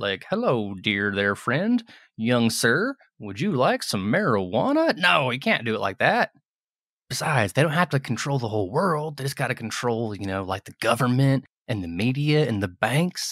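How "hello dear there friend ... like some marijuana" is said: cop voice with a friendly manner. Speaker mocks how an undercover cop would talk, undercover cop impression. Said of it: "It's not like an undercover cop".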